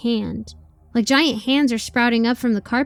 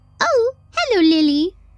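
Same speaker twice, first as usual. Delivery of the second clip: put-on squeaky, high little old lady voice; 9 semitones higher, 4 dB louder than usual. Reading a story aloud, an old receptionist greets lily: squeaky voice. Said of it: "she says in a squeaky voice".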